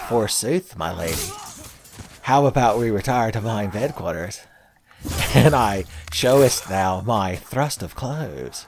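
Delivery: mock, vaguely seductive put-on voice. Acting out an earl speaking to a lady: mock-seductive voice. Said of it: "uses my vaguely D and D Greg quote-unquote seductive voice".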